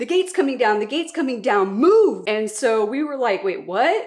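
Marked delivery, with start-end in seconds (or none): 0.0-2.2 play-acted, urgent, alarmed screaming at top of lungs. Retelling how a man yelled a warning as a gate closed: imitating a man screaming. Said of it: "the guy yelling, like screaming".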